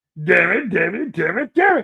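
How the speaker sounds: put-on cartoon villain voice. Repeating a sketch line to test a familiar voice: imitating a cartoon villain voice. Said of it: "that voice sounds familiar".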